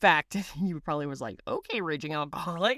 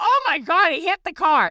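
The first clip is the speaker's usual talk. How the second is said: loud, shrill, very high outburst; 9 semitones higher, 7 dB louder than usual. Retelling seeing a car get hit: imitating own loud exclamation. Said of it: "And I loudly, in my voice, go".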